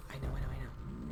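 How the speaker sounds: soft, hushed, unvoiced, reassuring whisper.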